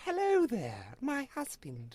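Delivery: put-on very high, slow, regal half-British half-American accent. Imitating an actress's accent from a movie: half British, half regal American. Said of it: "half British, half, like, regal American".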